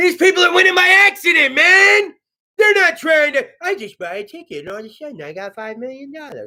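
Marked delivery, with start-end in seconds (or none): 3.6-6.5 hushed, soft put-on voice, dropped low. Imitating a lottery winner who got rich by accident: Adam Sandler voice. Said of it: "I turned kinda Adam Sandler during that".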